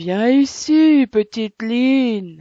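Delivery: heavy, big, loud, slow commanding voice. Narrating a tale, the grown witch orders little line over, big voice. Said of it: "ordonna-t-elle d'une grosse voix".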